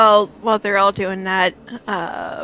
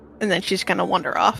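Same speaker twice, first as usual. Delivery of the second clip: ordinary delivery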